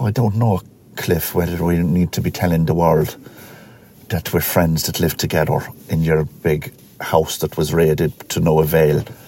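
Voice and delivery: clumsy, bad, fake put-on Irish lilt. The speaker commits to voicing the guy, addressing Cliff, in a bad Irish accent. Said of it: "I'm going to do a bad Irish accent".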